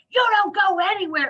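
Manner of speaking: put-on sharp, high, yelled delivery. Speaker retells a woman in jail shouting at them: imitating someone shouting. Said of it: "and she's shouting at me".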